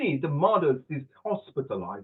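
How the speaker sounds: put-on British English accent. Reading out answer option C of a quiz to the group: British English accent. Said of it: "now British English".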